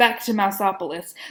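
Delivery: ordinary delivery, nothing marked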